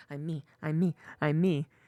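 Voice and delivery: slow, crazed, repetitive deranged muttering. Describing a voice that mutters whenever someone talks: put-on deranged muttering. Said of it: "the same muttering".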